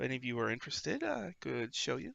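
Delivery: rough, creaky character voice. Voicing a dragonborn shopkeeper greeting adventurers: voicing a dragonborn shopkeeper. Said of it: "My name is Rishal the Page Turner".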